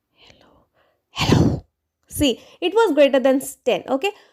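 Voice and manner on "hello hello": soft, breathy whisper, barely voiced. Testing whether the computer picks up a whispered hello, whispering. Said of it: "So now I'll whisper again".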